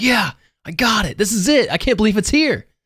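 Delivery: acted, very high, thrilled excited shriek. Voicing an excited character who finds an item: screaming in excitement.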